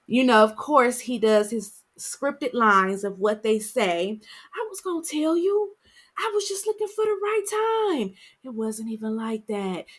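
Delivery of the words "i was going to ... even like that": pitched-up, slick, smooth, sweet-talking voice. Retelling a TV episode, the husband makes excuses: imitating smooth talk. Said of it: "his smooth talk in her ear".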